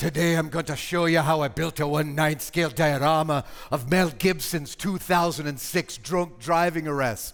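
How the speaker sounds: put-on Irish-accented narrator voice. Retell the opening heard in a video someone sent you, in a Bobby Fingers Irish voice. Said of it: "I heard this Irish voice go".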